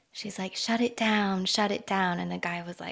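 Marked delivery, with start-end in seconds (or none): none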